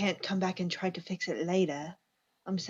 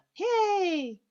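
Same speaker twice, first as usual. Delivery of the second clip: high, drawn-out, fake, sarcastic cheer; 12 semitones higher, 4 dB louder than usual. Describing a town that has turned to murder: sarcastic fake cheer. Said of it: "You know I'm being sarcastic".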